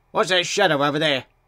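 ordinary delivery

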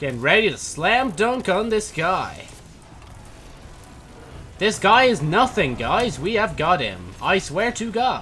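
high, loud default text-to-speech narrator voice. Playing a game and hyping up a fight, in a TikTok voice imitation. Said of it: "an imitation of, like, the TikTok voice".

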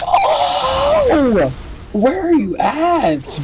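high, startled yelp.

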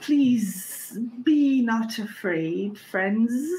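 voice of a bee swarm speaking as one. Voicing a talking swarm of bees that greets the players: voice of a bee swarm. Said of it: "a voice that seems to come from the swarm of bees".

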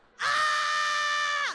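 loud, high-pitched scream.

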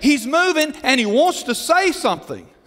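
loud high yelling.

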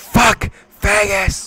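all-out, high, slow, drawn-out loud yell.

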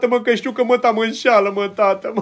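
weeping while speaking, tearful. A father, asked by his child why he is crying, answers: crying. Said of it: "Plâng".

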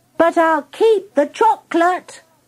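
shouting, pitched high. Narrator reads a pupil who can't be the dragon, shouting. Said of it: "she shouted".

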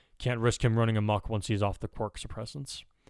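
ordinary delivery, nothing marked

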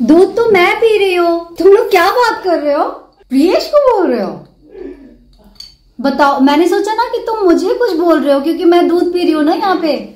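playful loud teasing.

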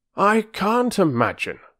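very high, irritable, irritated tone. Narrator reads a man speaking to a woman as they part, irritably. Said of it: "speaking irritably".

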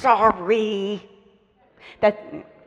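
clenched-teeth delivery. Demonstrating an apology children are trained to say, through gritted teeth. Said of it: "Looking away through gritted teeth".

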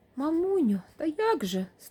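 feeble, half-hearted, weak, high-pitched delivery. A daughter replies to her mother, weakly protesting. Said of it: "слабо боронилась Марися".

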